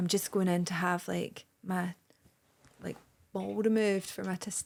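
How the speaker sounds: soft, hushed half-whisper kept low. Retelling what a caller said on the phone, half-whispering. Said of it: "I don't know why I'm whispering".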